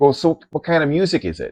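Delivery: put-on Minnesota accent. Retelling what a man on the bus asked the group, in a minnesota accent. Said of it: "He had this really like North Michigan or Dakota, Mi- Minnesota accent".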